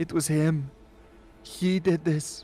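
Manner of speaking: high, tearful voice, crying through the words. Voicing a father confessing to a ghostly figure: crying while speaking. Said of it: "he begins to cry".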